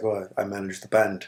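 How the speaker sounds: put-on British-accented voice. Retelling what a man at the bar said: imitating a British accent. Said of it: "in his British accent or whatever".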